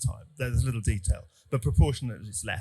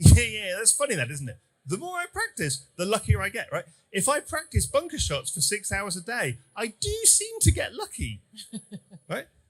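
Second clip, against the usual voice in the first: quick, swooping, sarcastic agreeing tone; 9 semitones higher than usual. Retelling his answer to someone who said he gets a lot of luck, retelling a sarcastic reply. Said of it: "Gary Player was being sarcastic".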